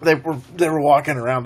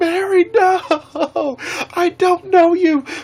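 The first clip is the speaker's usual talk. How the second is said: very high, loud panicked screaming. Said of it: "I was, like, screaming the whole time".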